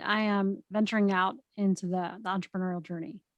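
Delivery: ordinary delivery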